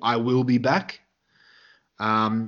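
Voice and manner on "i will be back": plain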